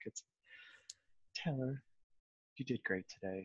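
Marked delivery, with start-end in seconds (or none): 1.3-3.5 very quiet, level, gently upbeat monotone. Performing the encouraging inner hero voice, calm, monotone, slightly upbeat. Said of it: "It's very calm and monotone and kind of slightly upbeat and optimistic".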